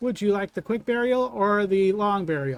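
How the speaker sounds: mechanical automaton voice. Narrating a scene to the listeners, the speaker voices the automaton addressing them. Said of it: "he raises it back up and he looks back at you and he says".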